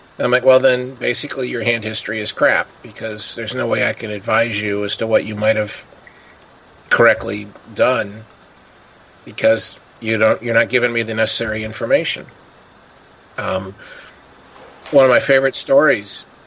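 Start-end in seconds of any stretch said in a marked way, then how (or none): none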